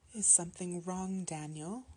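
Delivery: ordinary delivery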